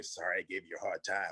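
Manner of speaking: hushed, soft half-whispered voice. Retelling what someone half-whispered in the ring: imitating a half-whisper. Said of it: "And he whispers to me".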